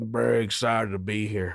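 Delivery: put-on western drawl. Retelling how a man greeted the chefs, quoting him; John Wayne-style Western drawl. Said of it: "speaking in a Western drawl".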